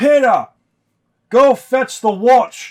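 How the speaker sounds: very loud, very high, drawn-out yell. A tavern owner calls out to a dwarf heading for the exit: yelling. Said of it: "The tavern owner now yells out".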